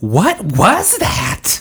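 put-on blurt, far too loud, high and swooping. Retelling what the mom said in a quiet, full theater: imitating mom speaking too loudly. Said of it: "way too loud for the full".

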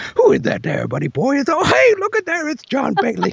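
very high cartoon voice, pitch swinging wildly, way up. Retelling a recorded call that came to his phone, he does a Tigger voice. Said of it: "after Pooh gets done talking, he's like".

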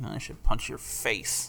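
put-on under-breath muttering. Retelling what a man on the train muttered right there, imitating someone muttering. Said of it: "he like muttered. It was like under his breath".

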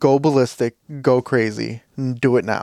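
ordinary talk, nothing marked

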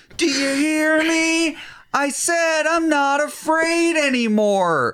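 put-on screaming shout, very high, drawn out. Speaker retells a scene where a character yells, retelling a character's yell. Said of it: "He's yelling to the world".

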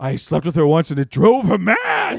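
hugely overdone hammy sitcom delivery, loud and swooping. Recapping a scene where he talks to Niles, the speaker imitates Kelsey Grammer's over-the-top voice. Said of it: "he's got this very over-the-top voice".

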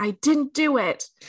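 play-acted, high, shrieking scream. Speaker recounts a scene where a woman screams at a man, retelling a scream. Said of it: "she screams at him".

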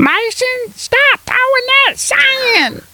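high, slow scolding voice, drawn-out "sand". Mocking how the listener just delivered a line, in a mocking imitation of the listener. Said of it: "That's what you sounded like".

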